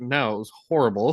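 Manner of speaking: plain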